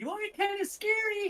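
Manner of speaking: very high-pitched effeminate voice. Storyteller voices a new character addressing the armored players, in a high-pitched voice. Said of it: "You hear a high-pitched voice".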